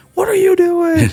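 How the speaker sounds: barking drill-sergeant yelling, very high. Retelling being given the wrong gloves: imitating a yelling drill sergeant. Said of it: "They're yelling at me".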